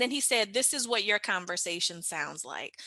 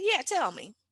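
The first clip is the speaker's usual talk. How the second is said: mock, pitched-up, stank, attitude-filled delivery; 6 semitones higher than usual. Retelling a reply to a boss: retelling own stank reply. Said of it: "Real, real stank".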